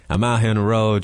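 imitated southern US accent. Retelling a man's video from a hotel room, imitated southern us accent. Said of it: "his southern accent".

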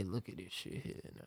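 barely voiced, hushed, whispered under-the-breath mutter. Retelling stepping behind in a checkout line: imitating muttering under breath. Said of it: "I'm talking under my breath a little bit".

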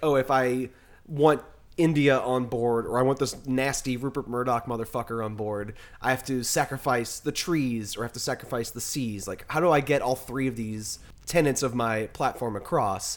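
ordinary talk

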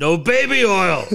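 loud screaming voice. Retelling a documentary story about a wrestler at cards: imitating Andre the Giant screaming. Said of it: "he'd just scream at Macho".

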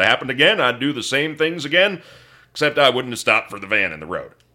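big put-on Oklahoma accent. Retell a man's answer to whether he'd have handled the situation differently, in a big Okie accent. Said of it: "he said in his like big oaky accent".

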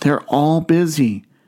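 imitated child whispering. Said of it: "Still whispering".

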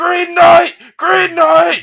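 very high-pitched, very loud shouting. Retelling trying to get the green knight to throw a rose, retelling a shout. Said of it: "I'm just shouting like".

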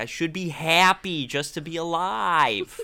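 put-on lively American accent. Recapping a character's scene at the doctor; put-on american accent. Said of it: "doing her American accent".

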